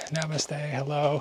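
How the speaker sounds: put-on small, childlike little girl voice. Retelling two little girls running out to greet: imitating a little girl's voice. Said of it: "like a little girl's voice".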